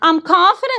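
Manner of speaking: confident said with a rising upswing at the end. Speaker demonstrates what an upswing sounds like, rising upswing intonation. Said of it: "That's what an upswing is".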